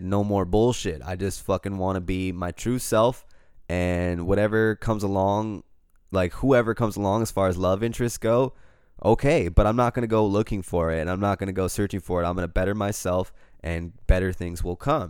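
ordinary delivery

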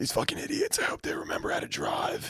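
put-on rasp, half-whispered and breathy. Retelling what a kid said, imitating his fake raspy voice. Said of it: "he definitely did that voice".

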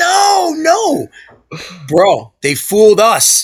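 acted scream. Recounting a childhood baseball play with his brother, retelling a scream. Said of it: "I'm screaming".

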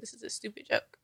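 angry, dismissive, breathy whisper. Retelling own reply to news thought to be a joke: retelling own angry words. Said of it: "I was angry".

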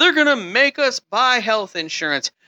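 mock yelling. Speaker mocks people who yelled about Obamacare, imitating people yelling. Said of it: "people who screamed and yelled".

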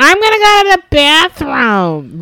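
put-on very high, really loud, shrill, swooping drunken blurt. Retelling what a girl in the front row said mid-set: imitating someone talking really loud. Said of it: "really loud".

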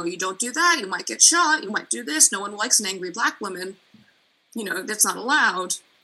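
ordinary delivery

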